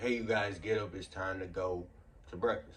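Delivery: ordinary delivery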